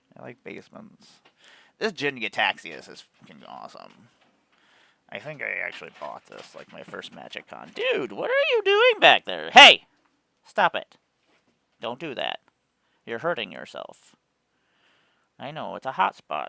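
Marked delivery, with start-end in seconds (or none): 9.5-14.2 yelling, much louder. Speaker breaks off to stop someone back there hurting themselves, yelling. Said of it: "I'm yelling at all of you".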